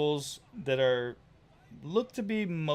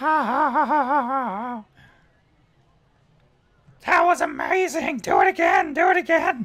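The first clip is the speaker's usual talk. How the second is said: squeaky goblin voice, very high and loud; 11 semitones higher, 10 dB louder than usual. Voicing a little goblin mesmerized by the flame in someone's eyes: little goblin voice. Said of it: "a little goblin now is".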